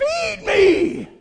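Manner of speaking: high-pitched, hollering monster voice. Recalling a movie, the speaker hollers like the Little Shop of Horrors plant. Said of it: "that plant kept hollering".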